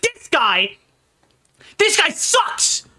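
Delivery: hostile, jeering, aggressive, high and slow.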